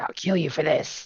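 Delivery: high-pitched, enraged, hissing voice. Game master voicing a foe pulling his leg from under a horse, hissing in rage. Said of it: "He hisses in rage".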